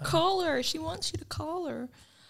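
best-effort fake American accent. In group banter, one speaker tries their best American accent. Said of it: "That was my best American accent".

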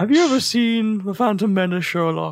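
mocking, taunting tone. Acting out a scene where Moriarty shows Sherlock a book: Moriarty voice. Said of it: "taunting him".

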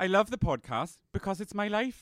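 best-guess Welsh accent. Podcast host reads a listener message, imitating Miranda's accent, Welsh-sounding. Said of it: "Are you Welsh?".

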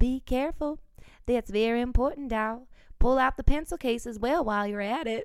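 put-on strong, heavy Southern US accent. Retelling Mary Lou's words as the speaker pulled a notebook from her purse, southern accent. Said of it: "in a very southern accent".

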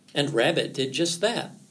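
ordinary delivery, nothing marked

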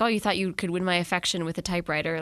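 ordinary talk

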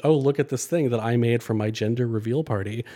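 plain

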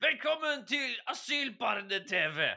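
high, slow, shouted announcer voice.

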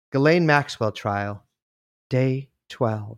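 mellifluous, sonorous tones. Asked to lead in a special voice, speaker announces the topic in mellifluous sonorous tones. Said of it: "My mellifluous sonorous tones".

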